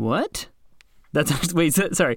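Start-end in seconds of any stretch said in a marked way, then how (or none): 0.0-0.5 disbelief sounding like sarcasm. Reacting to a surprising fact with sarcastic-sounding surprise. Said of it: "sounded like I was being sarcastic".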